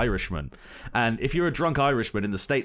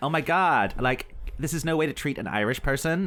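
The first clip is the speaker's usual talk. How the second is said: put-on californian valley-girl drawl; 2 semitones higher than usual. Mocking how girls from California talk about the Irish: imitating a California girl.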